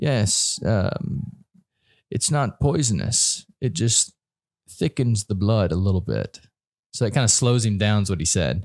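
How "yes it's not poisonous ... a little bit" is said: very slow, stretched-out, drawn-out speech. Speaker quotes a man answering an interviewer's question, retelling very slow speech. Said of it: "he was talking really slow".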